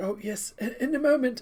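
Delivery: put-on doddering, doddery elderly man voice. Voicing a priest waving a visitor to wait: doddery old priest voice. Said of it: "the doddery old priest".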